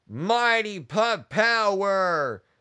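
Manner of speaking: rallying cheer with the word power drawn out. Urging everyone to cheer again even louder, with a louder shout. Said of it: "Really louder".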